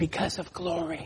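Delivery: gentle, really soft, hushed voice. Showing how to answer someone who asks why you go to church: said really softly. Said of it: "maybe you say it really soft".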